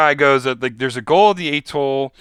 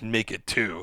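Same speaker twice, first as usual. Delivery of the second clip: low, sinister, menacing bad-guy voice; 4 semitones lower, 10 dB quieter than usual. Retelling a villain's line while recapping a film scene: imitating an evil voice. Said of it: "kind of, like, evilly".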